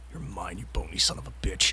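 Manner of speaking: menacing, threatening tone. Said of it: "crack their knuckles loudly, and go".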